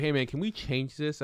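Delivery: normal talking voice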